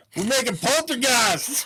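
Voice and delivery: all-out yell, very loud, shrill and high. Repeating the joke just made about a hot spring: repeating own yell. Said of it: "full on yelling that".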